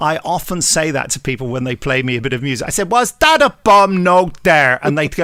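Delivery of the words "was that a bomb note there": loud, pitched-up, bad fake Irish accent. Quoting what he says when people play him music, in a rubbish Irish accent. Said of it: "rubbish Irish accent".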